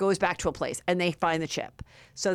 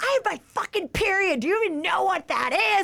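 put-on very high, furious, raging screech; 13 semitones higher than usual. Retelling a woman yelling at a ticket worker, imitating her screaming. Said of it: "She's like screaming".

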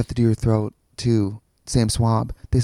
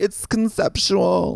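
pained, suffering, very high, creaky croak; 9 semitones higher than usual. Describing how a woman they knew used to talk, the speaker imitates Liz's voice. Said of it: "Like she kind of talked like that".

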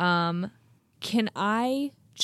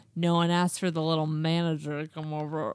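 imitated drunk slurring, lower pitch; 3 semitones lower than usual. Retelling a drunk woman confronting the manager, imitating drunk slurring. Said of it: "gets 2 inches away from my face and slurs".

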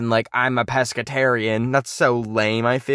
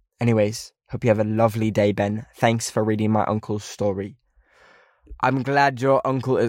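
put-on British accent. Reading out a submitted story and replying to it: put-on British accent. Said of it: "we're cutting the British accent".

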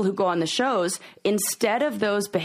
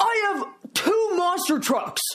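mock yelling, much higher; 12 semitones higher than usual. Retelling what one of them yelled at the speaker, retelling a yell. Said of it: "one of them yelled".

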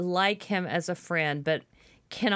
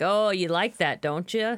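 plain

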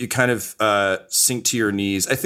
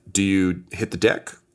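normal talking voice

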